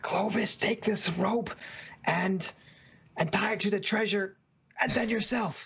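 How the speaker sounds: exaggerated, big, high stage whisper. A player character stage-whispers orders across to Clovis during the game: big stage whisper. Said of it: "stage whisper".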